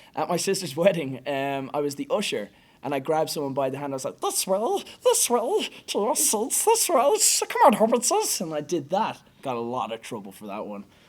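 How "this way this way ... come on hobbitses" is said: loud, shrill, very high creature voice. As usher at a sister's wedding, leading a guest by the hand, in Gollum voice. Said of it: "Gollum is definitely my favorite".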